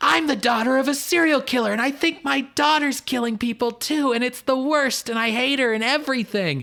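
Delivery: play-acted, very high shrieking, screamed outburst. Recapping a scene where a woman screams while with her dad: imitating someone screaming. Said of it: "just like screaming like".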